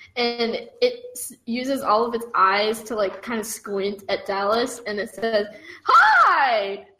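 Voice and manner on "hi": bright friendly voice, high and drawn out. Narrating a many-eyed blob turning to greet a character, a friendly hi. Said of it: "That was a friendly hi".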